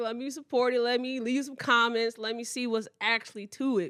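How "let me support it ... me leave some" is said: ordinary delivery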